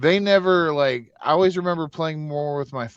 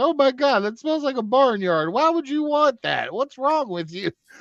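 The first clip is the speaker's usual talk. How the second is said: mock, very high-pitched, shrill scolding yell; 10 semitones higher than usual. Retelling how a buddy's mom reacted to a toy: imitating a mom yelling. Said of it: "yell at him".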